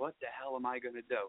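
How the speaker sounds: soft, hushed half-whisper. Retelling a phone call from someone stuck in the women's room: imitating someone half-whispering. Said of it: "he's whispering on the phone to me".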